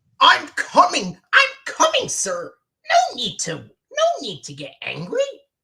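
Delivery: very high, loud, swooping waiter voice. Playing the waiter answering an impatient customer: Grover voice. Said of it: "I did Grover's".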